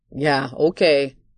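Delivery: dry, deadpan delivery. A man replies to a woman's denial, dry. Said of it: "he stated dryly".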